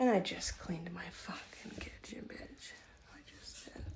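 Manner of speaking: annoyed, soft, unvoiced whispered grumble under the breath.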